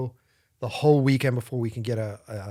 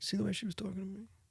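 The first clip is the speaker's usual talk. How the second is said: barely audible, very quiet, pitched-up hushed murmur; 7 semitones higher, 15 dB quieter than usual. Retelling what a firefighter said quietly to his partner: imitating a murmur.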